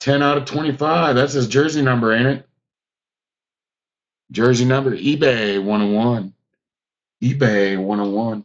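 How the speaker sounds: heavy tongue-in-cheek sarcasm, repeated for effect. Speaker remarking to viewers on a numbered hit, being sarcastic. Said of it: "I am being sarcastic when I do that".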